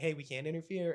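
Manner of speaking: ordinary delivery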